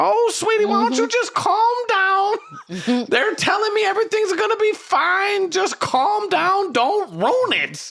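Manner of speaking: very high, gentle, soothing sweet-talking voice. Recalling what the psychic guide would tell them, imitating Miss Rita. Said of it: "She talked like that".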